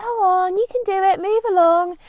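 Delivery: very high, drawn-out, encouraging cheering shout. The speaker re-enacts shouting at the cows she had to get past, retelling a shout. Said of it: "I was shouting and speaking".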